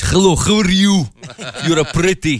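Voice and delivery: put-on Russian accent. Joking that Russian lovers are missing from movies: put-on Russian accent. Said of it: "You don't see a lot of Russian lovers in movies".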